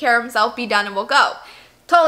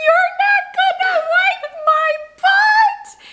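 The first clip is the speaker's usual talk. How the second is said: put-on very high, very slow, drawn-out tearful yell; 3 dB louder than usual. Retelling a little boy's outburst in a restroom stall, retelling a tearful yell. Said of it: "He yells out loud with, like, tears in his eyes".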